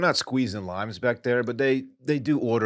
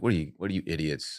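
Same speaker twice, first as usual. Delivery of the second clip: totally disgusted, scornful, contemptuous tone; 6 semitones lower, 5 dB quieter than usual. Acting out a reaction to rude diners at a family restaurant: acting out total disgust. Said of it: "look at them in total disgust".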